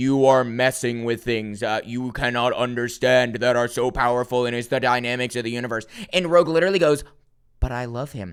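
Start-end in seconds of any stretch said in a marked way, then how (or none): 0.0-5.9 giant cosmic being voice, deep, low and vast. Speaker recounting Rogue challenging a Celestial: booming Celestial voice. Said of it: "booming voice".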